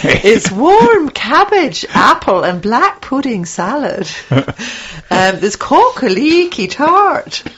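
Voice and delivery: bad put-on Scottish accent. Reading menu dishes aloud to another speaker: bad scottish accent. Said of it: "That is my Scottish accent".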